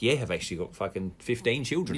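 ordinary delivery

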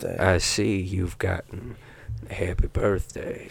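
slow, hushed, breathy delivery. Doing an impression of Matthew McConaughey wishing happy birthday: Matthew McConaughey impression. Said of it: "my Matthew McConaughey needs work".

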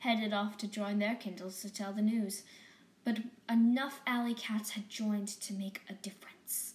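ordinary delivery

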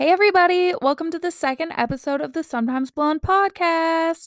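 rough, scratchy, slightly high voice. Podcast host welcoming listeners to the second episode, in a scratchy voice. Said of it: "My voice is doing a weird thing".

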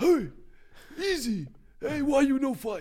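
very high, heavily exaggerated Cuban accent. Retelling a video where Yoel Romero calls out Izzy, in his Cuban accent. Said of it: "in his very glorified Cuban accent".

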